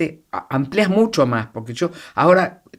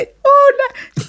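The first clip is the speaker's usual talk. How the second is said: put-on very high, girlish little-girl voice; 6 dB louder than usual. Describing an actor's entrance on a TV set, doing a little-girl voice. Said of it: "va corriendo como una niñita".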